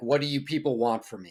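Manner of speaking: plain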